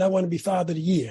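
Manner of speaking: ordinary talk, nothing marked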